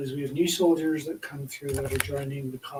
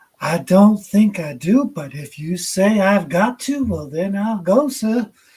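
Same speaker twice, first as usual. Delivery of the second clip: very loud, high put-on South Carolina accent; 5 semitones higher, 11 dB louder than usual. Retelling what a man said back, imitating a South Carolina accent. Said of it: "hearing someone like him do a accent from South Carolina".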